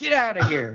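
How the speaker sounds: acted yelling. Recalling the ending of Harry and the Hendersons, imitating someone yelling. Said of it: "like yelling at him".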